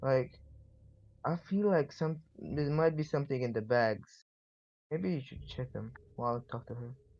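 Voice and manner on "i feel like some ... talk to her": soft, hushed whisper under the breath. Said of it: "whisper to, something to, uh, Vin-, uh, Vincent".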